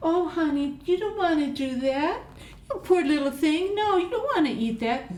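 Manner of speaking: put-on sweet doting baby talk, pitched way up. Showing a tone that is not a real no, affectionate sweet tone. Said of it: "that's affectionate talk. sounds nice".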